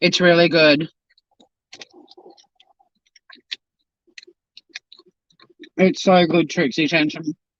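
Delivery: muffled speech, talking with mouth full of food. Eating pizza live on YouTube, talking with mouth full. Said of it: "Sorry that I'm talking with my mouth full".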